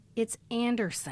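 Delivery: put-on, mock disdainful voice. Retelling a scene of correcting a small child: imitating Melissa's disdainful correction. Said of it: "looks at her with such disdain".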